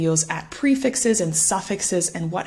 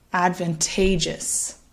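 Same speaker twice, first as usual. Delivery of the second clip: advantageous with weight on the third syllable ta; 4 dB quieter than usual. Pronunciation lesson on the four-syllable word advantageous: stress on third syllable "ta". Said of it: "hopefully you can hear that stress falling on the third syllable".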